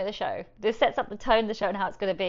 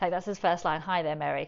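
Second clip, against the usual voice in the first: ordinary talk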